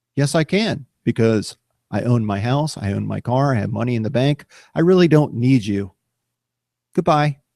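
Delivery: ordinary talk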